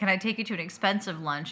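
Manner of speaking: ordinary talk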